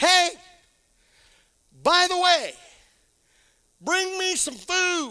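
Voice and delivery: put-on man's high, called-out yell. Retelling the story of a man and a woman, the speaker yells out his call. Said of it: "Then he yells out".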